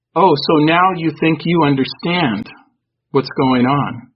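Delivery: menacing, scornful, mocking, intimidating tone. Speaker recounts what a presence said in their thoughts, retelling a mocking, intimidating tone. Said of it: "kind of in a mocking tone".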